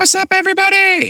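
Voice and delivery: unexpectedly very high-pitched voice. Podcast co-host greeting the audience after being introduced, voice went high. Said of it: "Oh, my voice got high".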